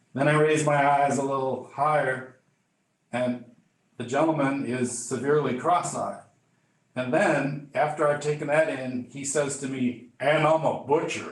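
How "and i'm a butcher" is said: put-on very deep, laid-on-thick Mississippi accent. Retelling what a gentleman from the local fire department said, in a deep Mississippi accent. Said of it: "he says it in this deep, deep Mississippi accent".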